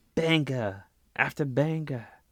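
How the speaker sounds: not-quite Irish accent. Recapping a wrestling main event to a co-host, in a bad Irish accent. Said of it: "That's not really an Irish accent there".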